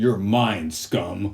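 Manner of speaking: robotic cyborg superhero voice. Comparing ways to do a superhero voice, trying the RoboCop Batman voice. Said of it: "is it better to do the RoboCop Batman voice?".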